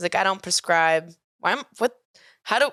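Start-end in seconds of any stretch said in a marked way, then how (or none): 0.2-1.1 terrible put-on Cockney accent. Quoting the guy being dated, who has a Cockney accent: terrible Cockney accent. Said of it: "that was a terrible accent".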